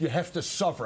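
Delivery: ordinary delivery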